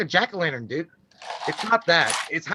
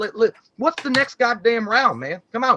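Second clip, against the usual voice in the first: laid-on backwoods Kentucky twang; 4 semitones higher than usual. Joking about slipping into the Kentucky voice of characters: put-on Kentucky hick voice. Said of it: "you wind up talking like this".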